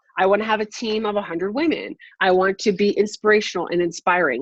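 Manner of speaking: ordinary talk, nothing marked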